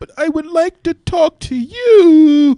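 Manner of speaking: very loud, shrill, high comic voice, you drawn out. Doing voices in a game round: Bill Cosby voice. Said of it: "That's Bill Cosby".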